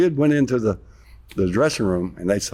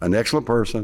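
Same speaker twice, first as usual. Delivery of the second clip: ordinary talk, nothing marked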